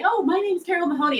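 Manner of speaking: very high, teasing, mocking little kid voice. Retelling how your kids mocked your cold calls, imitating kids' mocking little voice. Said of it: "they go into this little voice and say".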